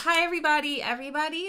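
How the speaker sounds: high, peppy cheerleader voice. Addressing the whole cafeteria as head of the cheerleading team: cheerleader voice. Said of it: "You use your cheerleader voice".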